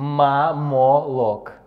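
very slow, clearly mouthed, over-articulated speech.

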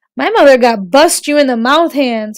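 ordinary delivery, nothing marked

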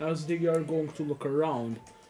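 ordinary delivery

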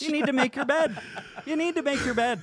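very high put-on Irish leprechaun voice. Telling someone to make the bed: leprechaun voice. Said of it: "he's a leprechaun now".

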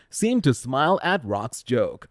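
ordinary talk

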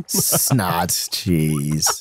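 very low, scornful and disgusted contempt. Finding they have no snad this time: contemptuous. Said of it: "I love the contempt in your voice".

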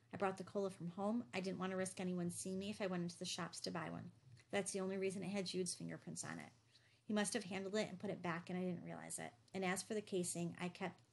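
plain reading voice

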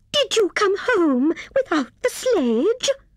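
very high, indignant voice. A squirrel confronts a hare who came home without the sledge, indignant.

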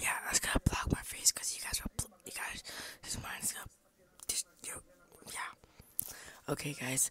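hushed whisper. Talking to viewers while recording a vlog, whispering. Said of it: "Why am I whispering?".

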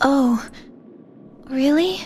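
disappointed, let down. Answering the transfer student who will tell the truth: disappointed. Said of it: "You sound disappointed".

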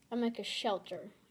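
plain

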